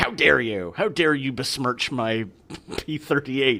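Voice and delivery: mock indignant, affronted, outraged, huffy tone. Imitating a super mad fan protesting a joke: imitating a super mad fan. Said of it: "that one guy who was super mad".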